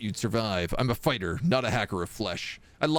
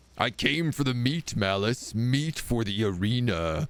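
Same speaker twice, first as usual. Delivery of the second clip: rumbling voice of a stitched-together monster. Interrupting a conversation after a crash and thundering footsteps, a creature speaks in a rumbling voice. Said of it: "The rumbling voice of the creature".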